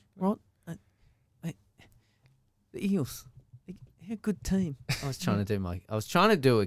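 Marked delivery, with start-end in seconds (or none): 0.2-4.8 higher, hesitant, halting sports pundit voice full of pauses. Talking about the Eels while imitating Kenty, pausing a lot. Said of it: "a Kenty impersonation".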